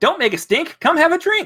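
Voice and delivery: very high-pitched robot voice. Voicing an automated keg that invites the party to drink: keg robot voice. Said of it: "you hear a voice come from him".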